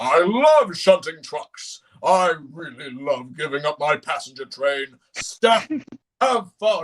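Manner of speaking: slow, deliberate voice with words drawn out. Imagining an episode where Gordon acts out of character: Gordon voice. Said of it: "if Gordon, ... and he's like".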